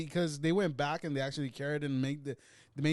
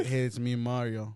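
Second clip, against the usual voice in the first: mocking flat monotone voice, lower pitch; 4 semitones lower than usual. Mocking how Mario sounded in a movie trailer: imitating the trailer's Mario. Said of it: "That's what Mario sounded like in a fucking trailer".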